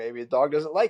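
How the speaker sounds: plain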